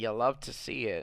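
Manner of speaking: ugly, unpleasant put-on voice. Showing how a catchphrase sounds in one's head: ugly voice. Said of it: "And I always hear it in the ugly voice too".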